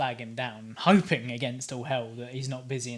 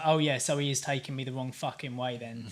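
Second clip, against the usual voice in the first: ordinary talk, nothing marked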